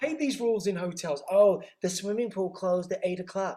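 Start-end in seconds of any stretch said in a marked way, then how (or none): 1.3-3.6 put-on general American accent, plain talking. Complaining about hotel rules, speaker says the line in an american accent. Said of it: "The reason why I'm doing an American accent".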